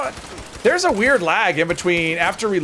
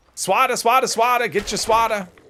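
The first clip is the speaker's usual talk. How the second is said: put-on, pitched-up Boston accent; 5 semitones higher than usual. Playing a game with others, the speaker breaks into a boston accent. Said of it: "my Boston accent".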